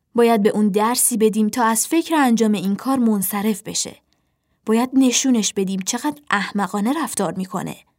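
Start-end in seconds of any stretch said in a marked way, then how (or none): none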